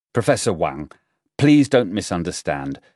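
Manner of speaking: plain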